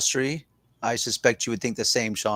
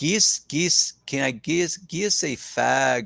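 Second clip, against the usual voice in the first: halting, rusty attempt at a Scottish accent; 2 semitones higher than usual. Trying a Scottish accent again after too long, in an attempted Scottish accent. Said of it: "if I could even remotely do a Scottish accent".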